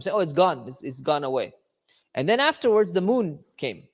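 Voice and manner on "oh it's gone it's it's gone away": scornful, derisive, teasing, making-fun tone. Retelling a public declaration to star worshipers: imitating a mocking tone. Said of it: "he's kind of mocking them".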